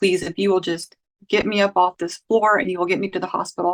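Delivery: desperate, pleading, begging tone. Retelling begging a boyfriend to take her to the hospital: imitating own past begging. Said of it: "I begged him".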